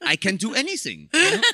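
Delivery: speaking with Icelandic accent. Joking about a character first wanted as Icelandic, mock Icelandic accent. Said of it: "That's my Icelandic".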